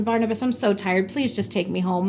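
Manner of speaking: ordinary talk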